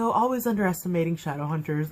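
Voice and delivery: ordinary talk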